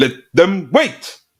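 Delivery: mock shrill, very loud, very high flip-out outburst. Quoting a film line about people waiting: imitating an actor flipping out. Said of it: "he just flips out".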